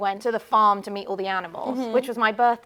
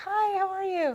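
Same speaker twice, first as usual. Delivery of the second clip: put-on light American accent, slight twang, very high pitch; 10 semitones higher, 3 dB quieter than usual. Speaker showing how she changes her voice to sound like others, american twang. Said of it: "I had a little bit of an American twang".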